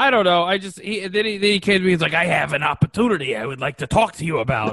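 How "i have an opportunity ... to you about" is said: smooth man's sales-pitch voice. Retelling how the man came up to pitch an opportunity, imitating that man's voice. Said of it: "in that voice".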